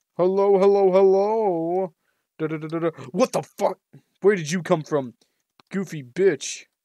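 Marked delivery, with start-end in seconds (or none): 0.2-1.9 talking at maximum volume, much slower. Talking over copyrighted game music to avoid a claim, as loud as possible. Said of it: "I'm talking as loudly as humanly possible".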